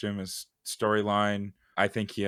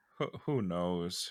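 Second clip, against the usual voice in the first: resigned, defeated voice, quieter; 2 semitones lower, 8 dB quieter than usual. Reacting after the recording crashed, sounding defeated. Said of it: "You sound defeated".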